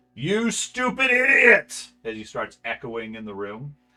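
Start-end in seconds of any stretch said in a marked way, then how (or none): 0.2-1.9 furious, loud shriek, very high. Narrator voicing Gorman rising above a screaming crowd, Gorman shouting angrily. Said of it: "you hear Gorman's voice rise above all of them".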